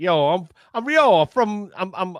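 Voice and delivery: high, bad, fake New Jersey accent. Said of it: "It's supposed to be New Jersey".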